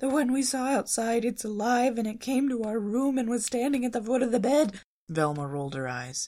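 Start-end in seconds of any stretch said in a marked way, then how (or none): 0.0-4.8 put-on character voice, pitched much higher. Reading a story, Shaggy tells Velma what they saw: teeth chattering. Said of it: "Shaggy said through chattering teeth".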